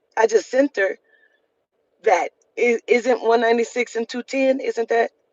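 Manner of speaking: plain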